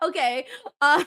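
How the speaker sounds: laughing it out. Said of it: "I'm just laughing at the chat right now".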